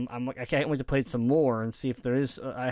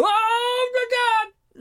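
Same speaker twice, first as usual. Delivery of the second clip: acted scream, much higher and louder; 7 dB louder than usual. Alone in a room, the speaker re-enacts their own past reaction: retelling own scream. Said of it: "and I'm screaming".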